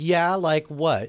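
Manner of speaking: play-acted, off-putting, skeptical tone with a little attitude. Retelling an anime fan's reply on being introduced: imitating Shannon's off-putting attitude. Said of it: "with that little bit of off-putting attitude".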